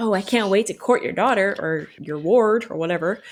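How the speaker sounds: plain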